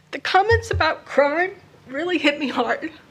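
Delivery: voice breaking and cracking with emotion. Speaker asks listeners to bear with her: voice cracking with emotion. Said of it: "forgive my cracking voice".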